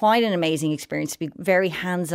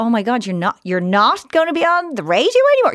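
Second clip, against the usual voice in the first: put-on disappointed child voice, louder; 5 semitones higher, 7 dB louder than usual. Retelling a conversation, the speaker imitates their child, disappointed. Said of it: "She was so disappointed".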